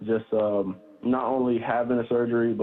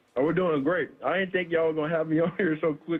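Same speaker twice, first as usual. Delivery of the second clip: high-pitched speech through a mouthful of liquid; 6 semitones higher than usual. Joining a live show by phone, talking with boba in mouth. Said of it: "I got some boba in my mouth".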